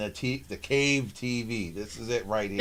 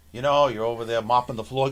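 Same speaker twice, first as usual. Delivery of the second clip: ordinary talk, nothing marked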